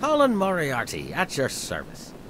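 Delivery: full swooping pirate voice. A game character introduces himself in a pirate voice. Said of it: "he just has to have a pirate voice".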